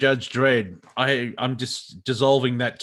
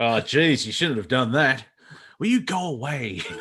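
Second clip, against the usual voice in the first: put-on strong, laid-on Australian accent. Improvising a made-up superhero, Mister Hindsight: Mister Hindsight's Australian accent. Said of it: "Mister Hindsight would be very Australian".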